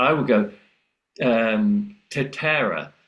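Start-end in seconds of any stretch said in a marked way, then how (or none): 2.1-2.8 put-on English-accented Spanish, alveolar T. Retelling saying a Spanish word in class: English-accented Spanish, alveolar T. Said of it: "That's awful".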